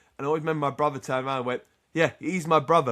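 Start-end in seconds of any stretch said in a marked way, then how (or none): 2.0-3.0 proud, prideful tone. Retelling a brother's reply to a family's praise: imitating Peter saying it with pride. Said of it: "but said it with, like, a lot of pride".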